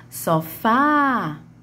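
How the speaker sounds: sofá, stress on fá, last syllable drawn out. Teaching Portuguese stressed syllables, calling out sofá: stressed, stretched final fá in sofá. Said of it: "minha última sílaba foi a sílaba que mais se arrastou".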